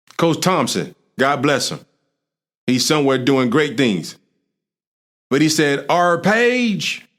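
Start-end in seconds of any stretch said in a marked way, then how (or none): 6.2-7.0 put-on country accent with drawl, the word page stretched out. Recalling a defensive coordinator's advice, imitating Coach Thompson's country accent. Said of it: "he talked like that, he country".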